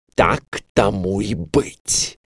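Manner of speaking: hissed angrily. Narrator reads the queen answering the king, angry hiss. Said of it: "зло прошипела королева".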